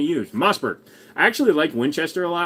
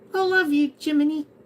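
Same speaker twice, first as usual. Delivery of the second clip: put-on very high-pitched little kid voice; 12 semitones higher than usual. Speaking to jiminy, in a little kid's voice. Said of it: "I probably shouldn't do that in a little kid's voice".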